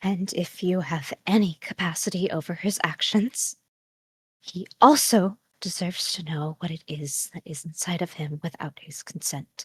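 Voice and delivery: low, hushed voice just above a whisper. Speaking in character into the dark near someone sleeping: low, just above a whisper. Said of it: "her voice is low, maybe just above a whisper".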